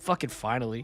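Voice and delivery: pretend quiet muttering. Describing a promised prank at a friend's funeral: mock muttering under breath. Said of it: "under my breath be like".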